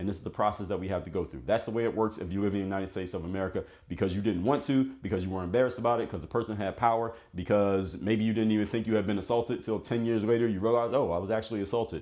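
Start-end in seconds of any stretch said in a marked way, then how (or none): none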